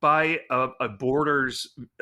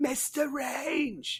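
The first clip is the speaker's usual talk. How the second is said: put-on witch-like yell, higher pitch; 13 semitones higher, 6 dB quieter than usual. Repeating the impression of someone yelling like a witch: imitating a witch-like yell. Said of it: "who's yelling that?".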